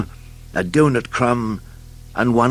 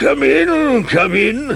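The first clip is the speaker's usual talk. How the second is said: slow, high-pitched wheeze drawn out; 13 semitones higher, 4 dB louder than usual. Narrator reads the doctor greeting Mister Skinny at his door: wheezing voice. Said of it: "he wheezed".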